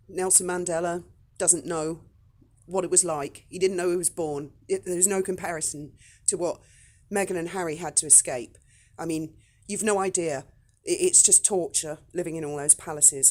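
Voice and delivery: plain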